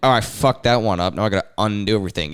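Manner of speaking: plain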